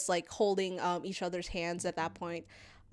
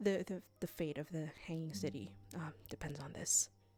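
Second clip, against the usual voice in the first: voice dropped low to a hush; 2 semitones lower, 9 dB quieter than usual. As Ithric, telling the others something in a lowered voice. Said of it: "Ithric um lowers their voice".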